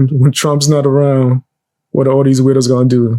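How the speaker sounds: ordinary talk, nothing marked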